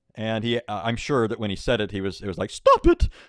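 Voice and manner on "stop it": put-on non-masculine, unmasculine voice. Imagining how Allah said stop it in the story, unmasculine voice. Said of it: "He couldn't have said that with a normal masculine voice".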